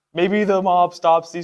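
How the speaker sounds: ordinary delivery, nothing marked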